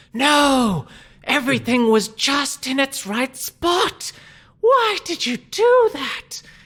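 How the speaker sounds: very high, slow, loud monster voice. Narrating a game scene, the speaker voices the Naga as it pops back up. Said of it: "the Naga pops back up and says".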